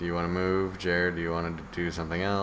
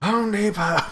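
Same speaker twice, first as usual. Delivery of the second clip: yelling out, higher and louder; 8 dB louder than usual. Voicing one of the drunken hobos answering from the crowd: shouting. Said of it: "One of them shouts".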